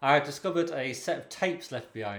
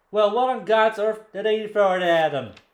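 slow, higher-pitched, louder mock Irish accent. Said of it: "asks the attendant".

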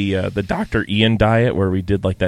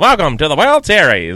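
put-on loud, pitched-up, old-timey 1940s ballplayer voice; 7 semitones higher, 5 dB louder than usual. Playing along with a joke bit: 1940s baseball player voice. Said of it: "We're gonna be nineteen forties baseball players".

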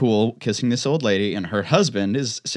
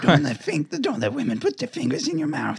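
animated, sing-song, pitched-up, swooping cadence; 6 semitones higher than usual. Repeating the line in a Fauci impression after praising one. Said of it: "That's a good Fauci impression".

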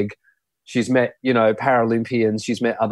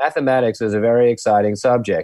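usual speaking voice

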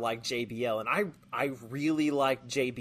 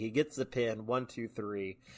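ordinary talk

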